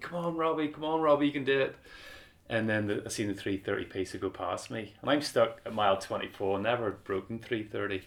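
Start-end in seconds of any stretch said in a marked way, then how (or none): 0.0-1.7 mock screamed cheering shout, high-pitched. Retelling being stuck with cramp mid-race: imitating crowd screaming. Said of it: "everyone is screaming at me".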